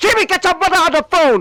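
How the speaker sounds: loud, high-pitched yelling. Retelling a father yelling at his kid Jamie, imitating a dad yelling. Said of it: "he's yelling to his kid like".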